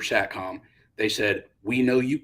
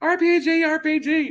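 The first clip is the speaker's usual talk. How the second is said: put-on very high, very slow, drawn-out, shrill little-girl call; 6 dB louder than usual. Retelling someone's call over the fire support net, in a little girl voice. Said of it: "I bet he sounded like a little girl".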